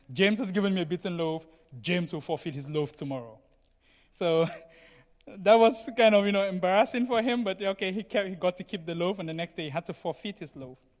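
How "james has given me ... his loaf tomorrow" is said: ordinary talk, nothing marked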